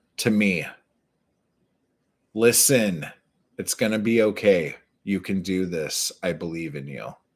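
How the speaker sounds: tearful, close to crying. Reading aloud the dedication he wrote to himself, about to cry. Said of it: "I'm about to start crying".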